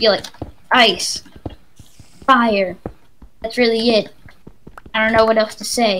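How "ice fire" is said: word fire stressed, said loud. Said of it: "you gotta put emphasis on that fire".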